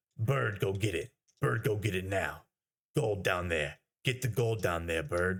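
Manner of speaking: rough, gruff put-on tough-guy voice, repetitive. Retelling how he talked to Bird while playing that game, in a gruff put-on voice. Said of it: "I would always like talk in this gruff voice".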